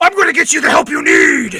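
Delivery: loud, swooping bat voice.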